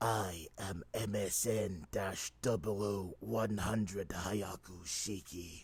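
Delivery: very slow, deliberate, unmodulated character voice, words drawn out. Recording a second take of a character impression: Blade Wolf impression. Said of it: "an impression of Blade Wolf without any voice modulators".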